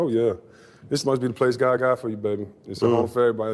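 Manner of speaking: ordinary delivery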